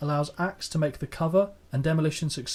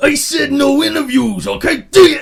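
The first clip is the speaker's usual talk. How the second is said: very loud, very high, drawn-out rough wrestler bellow; 12 semitones higher, 15 dB louder than usual. Retelling a wrestler's backstage outburst at a cameraman: Randy Savage shouting impression. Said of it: "I can't do Savage shouting".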